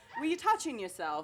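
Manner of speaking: put-on British accent, soft and hushed. Asking listeners to picture someone saying it, in a British accent. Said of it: "picture someone saying it in a British accent".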